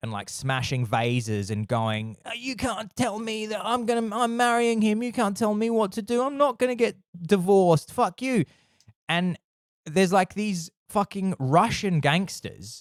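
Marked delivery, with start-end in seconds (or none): 2.2-8.4 very high, bratty, spoilt-brat tantrum outburst. Describing a scene from a serious film, acting out a woman's mock spoilt-brat tantrum. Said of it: "kicking off like a sort of spoilt brat".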